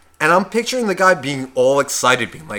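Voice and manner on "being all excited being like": ordinary talk, nothing marked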